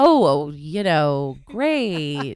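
very slow, loud, swooping, drawn-out sarcastic drawl. Asked how the conversations with the families went, the speaker answers, sarcastic. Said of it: "I'm being sarcastic".

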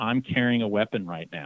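ordinary talk

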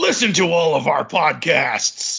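gruff, rough wrestler-style voice. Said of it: "That sound like you're trying to do Macho Man Randy Savage".

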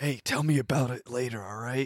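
secretive, half-whispered under-the-breath aside. Speaking in character, elbowing a companion: half-whisper. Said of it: "kinda whisper".

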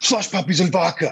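high, giddy, blurted out. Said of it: "He's like".

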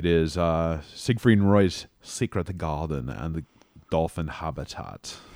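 put-on German accent. Recalling a visit to the Mirage, naming its attractions in a put-on accent. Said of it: "I feel the need to say it in that accent".

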